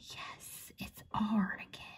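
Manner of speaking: very soft, whispered aside.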